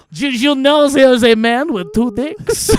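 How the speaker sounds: bad, silly put-on French accent, high and loud. Speaker shows how they deliver the line the second time: silly french accent. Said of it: "The French accent".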